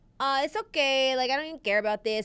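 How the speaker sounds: put-on accent from Miami. Imitating Miami fans about title game tickets: Miami accent. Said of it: "I'm allowed to do that accent".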